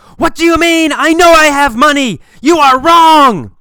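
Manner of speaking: furious shouting, shrill, very high and very loud. Telling a mini story to teach a phrase, a customer yells at the bank employee. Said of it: "He starts yelling".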